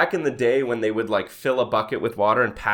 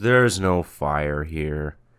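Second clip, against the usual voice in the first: play-acted sad, sorrowful, dejected voice, low; 6 semitones lower than usual. Retelling a fire chief speaking into his radio, imitating the chief's sad voice. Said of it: "Just sounded so sad".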